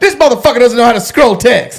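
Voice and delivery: very high, shrill, fed-up yelling. Retelling how someone yelled at the guys: imitating someone yelling. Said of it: "He starts yelling at these guys like".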